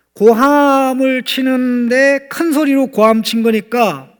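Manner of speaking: stress on 큰, stretched high and slow.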